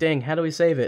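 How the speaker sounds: normal talking voice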